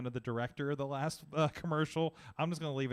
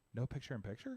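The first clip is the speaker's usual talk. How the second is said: put-on crestfallen, really sad, disappointed, let-down voice; 7 dB quieter than usual. Retelling her reply about losing picture in picture: imitating someone really sad. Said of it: "Like, really sad".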